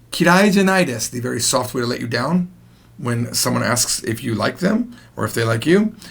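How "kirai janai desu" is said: ordinary talk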